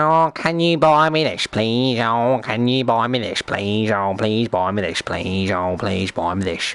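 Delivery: mock pleading, repeated please-please begging voice. Complaining about players in the game, imitating people begging. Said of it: "the amount of people who are like".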